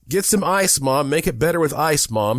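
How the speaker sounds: put-on high, screeching, shrieking kid's cry. Charlie calls to his mom after they hit the tree, shrieking. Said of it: "shrieked Charlie".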